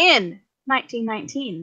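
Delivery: put-on storybook reading voice, like an audiobook narrator. Giving a best audiobook reader voice for a story's opening: audiobook narrator voice. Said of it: "audiobook reader voice".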